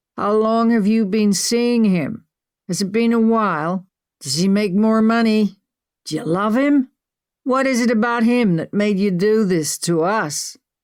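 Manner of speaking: put-on slurred drunk speech. Reading a story, a caller questioning his partner: slurred drunk speech. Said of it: "he slurred".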